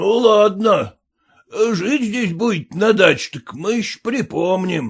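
ground out and grumbled through gritted teeth. After the threat works, the peasant stops cursing and gives in: muttered through clenched teeth. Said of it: "сжав зубы, пробормотал".

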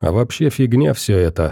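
ordinary delivery, nothing marked

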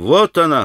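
crying out, exclaiming. A man cries out as a woman suddenly appears at the door, exclaiming. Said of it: "воскликнул Алеша".

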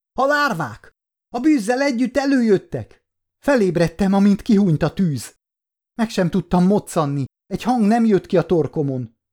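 crying out in terror, pitched high. A character comes to beside the fire, crying out. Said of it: "kiáltotta".

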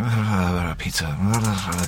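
like talking in a dream, sleep-talking.

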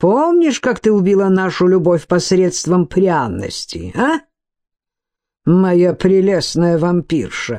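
ordinary talk

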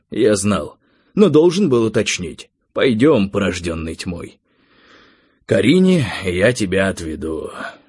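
ordinary delivery

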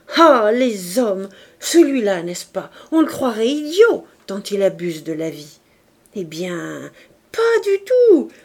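loud, sudden exclamation bursting out all at once. A woman standing and rereading a letter suddenly bursts out. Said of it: "puis elle éclata".

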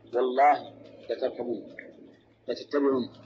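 ordinary talk

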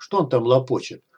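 ordinary delivery

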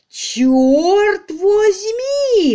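shrill, high, booming roar, Черт drawn out. Served an arrest warrant, Marchenko leaps to his feet, roaring. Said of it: "взревел Марченко".

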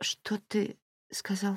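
strangled, half-choked, barely voiced whisper. Just told that someone was found, a woman asks him to repeat it: half-choked whisper. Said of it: "Переспросила полузадушенным шепотом".

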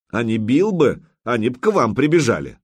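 usual speaking voice

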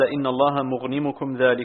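ordinary talk, nothing marked

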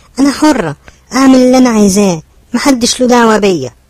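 very high-pitched yelling. Narrator reading a niece shouting at her aunt and the aunt's husband. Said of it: "وقد صاحت في وجههما يوما".

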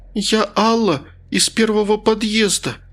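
high, quavering, faltering, trembling stammer. A woman at gunpoint answers a sergeant shouting at her, in a trembling, stammering voice. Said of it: "дрожащим голосом пролепетала она".

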